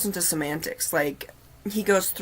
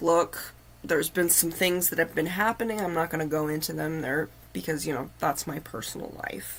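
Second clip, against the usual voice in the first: ordinary talk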